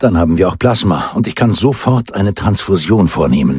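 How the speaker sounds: ordinary delivery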